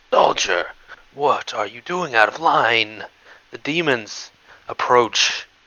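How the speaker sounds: terrible, rasping, grating, shredded voice. Narrating a game, voicing a man pointing an accusing finger at you: terrible grating voice. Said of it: "from a terrible, grating voice, as though his vocal cords have been ripped to shreds".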